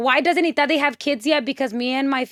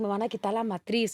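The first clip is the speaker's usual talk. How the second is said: put-on tearful voice, lower and quieter; 3 semitones lower, 8 dB quieter than usual. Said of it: "I was crying".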